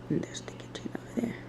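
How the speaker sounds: soft, unvoiced whisper. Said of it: "I'm whispering because everybody's still asleep".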